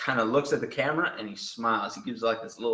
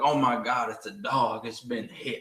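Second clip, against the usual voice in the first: Southern accent impression. Retelling how a man feigned concern over a hit dog, quoting him: imitating a southern accent. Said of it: "he has a good Southern accent".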